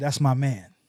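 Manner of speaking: stern, firm voice. Retelling own reply in a tense exchange: retelling own stern reply. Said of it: "Just as stern as he was saying it wasn't".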